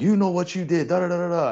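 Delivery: acted in-your-face screaming. Retelling how a referee ran up and screamed at him: imitating a referee screaming. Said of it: "runs up into my face and starts screaming at me".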